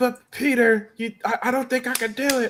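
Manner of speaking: put-on very high, whiny, stammering child voice stumbling over words. Mocking a movie character's line, whiny Miles Morales voice. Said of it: "nobody's voice is whinier than Miles Morales Spider".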